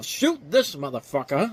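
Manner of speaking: swooping, swinging pitch, mild half-shouted yell. Quoting a movie line after praising the actor: imitating Morgan Freeman yelling. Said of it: "that distinctive voice of his yelling the word motherfucker".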